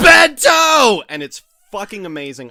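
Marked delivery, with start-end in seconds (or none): 0.0-1.0 very loud, very high, shrill top-of-lungs scream. Retelling the show's break where a guy appears: imitating a screamed announcement. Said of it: "screams at the top of his lungs".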